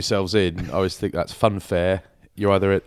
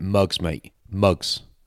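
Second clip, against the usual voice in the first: hostile, aggressive, mocking jibe. Retelling what a scaffolding boss said while driving past: imitating an aggressive insult. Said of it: "really aggressive".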